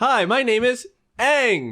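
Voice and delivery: play-acted stiff wooden reading, very high, very slow. Mocking how the live-action actors read their lines: imitating flat wooden acting. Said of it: "Was it like that?".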